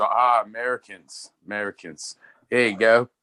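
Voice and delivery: put-on English-accented voice. Retelling a trip to spain, doing a guy's english accent. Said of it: "That's my, my English accent".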